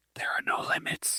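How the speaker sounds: loud breathy hushed whisper, very close to the mic. Repeating another speaker's words into the microphone: loud whisper. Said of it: "when I whispered that loudly into the microphone".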